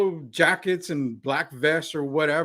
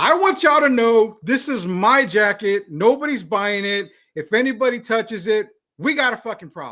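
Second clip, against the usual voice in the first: loud, high-pitched screaming; 6 semitones higher, 6 dB louder than usual. Retelling a woman in a store shouting about her jacket: imitating a woman screaming.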